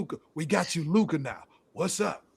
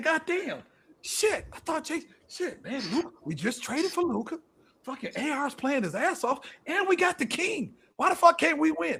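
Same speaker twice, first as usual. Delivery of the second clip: high, fed-up, exasperated grumbling rant; 9 semitones higher than usual. Acting out what the fans say at the game: imitating a frustrated Lakers fan. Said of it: "you know what they saying? They saying".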